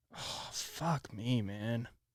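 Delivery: very slow, drawn-out, exasperated, angry cursing. Reacting after accidentally ending a DoorDash shift: angry and frustrated. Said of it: "I'm so angry right now".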